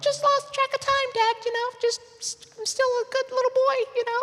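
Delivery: put-on voice up a few octaves, guilty child-like.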